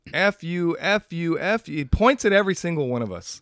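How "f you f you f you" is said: mock, very slow, drawn-out, mild scream. Retelling a man who came up screaming at the speaker's group, retelling a man screaming. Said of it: "he comes up screaming".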